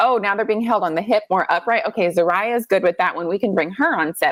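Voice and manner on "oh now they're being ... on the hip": ordinary delivery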